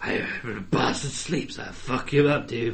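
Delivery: awful put-on British accent. Mocking an actor's performance as Dracula, awful Keanu Reeves British accent. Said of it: "his fucking awful British accent".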